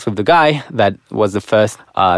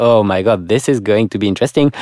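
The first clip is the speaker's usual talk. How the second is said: plain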